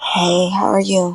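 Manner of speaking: 1-900 hotline voice. Answering a greeting after being called on: 1-900 hotline voice. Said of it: "What in the one nine hundred phone voice".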